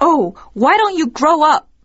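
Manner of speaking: high, loud, angry tone. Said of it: "She responded in a very angry tone".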